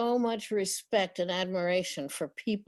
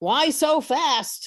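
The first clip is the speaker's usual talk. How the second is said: startled call, high-pitched and loud; 7 semitones higher, 7 dB louder than usual. Retelling being pulled blindfolded down a sidewalk by a dog: retelling a shout. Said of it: "And I'm shouting".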